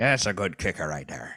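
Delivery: sea pirate-sounding voice. Speaker praising a kicker's points, pirate voice. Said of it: "I don't know why I sound like a pirate".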